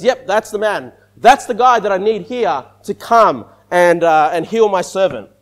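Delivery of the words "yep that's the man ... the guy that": usual speaking voice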